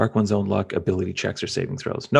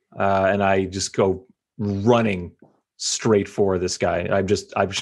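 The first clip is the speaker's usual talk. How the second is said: ordinary delivery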